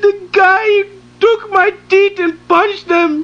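crying and sobbing in pain.

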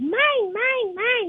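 put-on high childish toddler voice. Telling the radio host how he pictures Satan: Satan as a two-year-old. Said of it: "Like a two-year-old kid".

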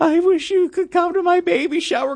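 mock weepy, very high-pitched, tearful voice. Quoting back to the listener what they said, imitating someone tearful. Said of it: "You tearfully said".

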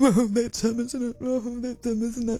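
sniggering, teasing schoolkid voice through giggles. Mimicking two people giggling about an older man, mimicking giggling schoolchildren. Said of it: "start giggling like two school children".

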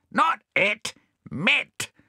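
shouting, very high and shrill. A man corrects a parrot that misheard his question, shouted. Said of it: "shouted Bill".

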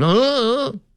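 put-on very high, bratty whining moan. Imitating a benched player reacting: imitating a whiny complaint.

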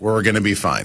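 ordinary talk

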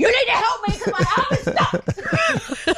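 very high, panicked voice with laughter.

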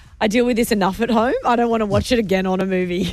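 ordinary talk

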